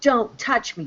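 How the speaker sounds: put-on screaming. Retelling a scene where she screamed in the car: imitating someone screaming. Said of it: "she was screaming".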